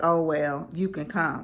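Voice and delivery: ordinary talk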